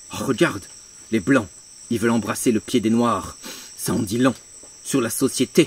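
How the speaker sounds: very low, grave, lecturing voice with heavy silences. Parodying a podcast host's tone, mock-grave professorial voice, heavy pauses. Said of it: "avec un ton bien professoral, avec ta voix grave, où tu fais des lourds silences".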